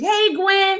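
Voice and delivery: put-on yelling. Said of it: "so they yell".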